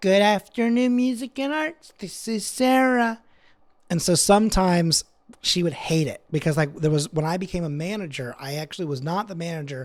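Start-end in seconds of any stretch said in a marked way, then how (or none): 0.0-3.2 put-on Valley girl voice, pitched very high. Imitating a coworker answering the phone: imitating a coworker's Valley girl voice. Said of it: "she was very Valley girl".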